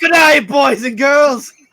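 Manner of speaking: really bad, clumsy fake Australian accent. Repeating a joke line about an Uber driver: bad Australian accent. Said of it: "Really bad Australian accents".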